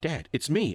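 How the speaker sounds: high, mock shout of horror and confusion. Reading a story where a father aims a gun at his son: horrified shout. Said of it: "I shouted out to him in horror".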